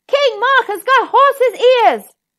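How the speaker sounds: very high, loud, gleeful call-out. Alone, he repeats his words a third time, even louder. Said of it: "said even louder".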